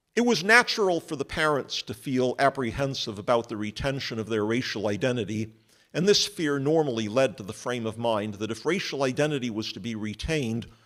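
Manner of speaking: ordinary talk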